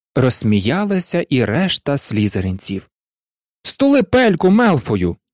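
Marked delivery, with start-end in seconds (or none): 3.7-5.2 loud shouting, sharp tone. Parvati Patil shouts at Malfoy after he laughs at Neville. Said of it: "крикнула Парваті Патіл".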